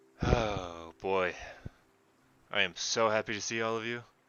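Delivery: overjoyed, very happy, delighted tone. Voicing Ezra greeting the returning heroes: very happy. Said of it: "he looks very happy to see you all".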